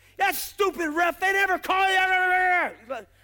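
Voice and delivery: ranting, high, drawn-out cussing. Mocking a listener who shouts at the tv, imitating cussing out a referee. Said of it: "Cussing out a referee like they can hear you".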